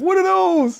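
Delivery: mock very high shriek, screaming. Retelling how Jess reacts to the headphones: imitating Jess screaming. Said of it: "Jess screams".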